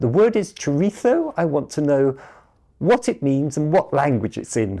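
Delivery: loud, swooping, very posh upper-class voice. Retelling a phone caller on the reference desk, in a very posh voice. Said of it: "this very posh".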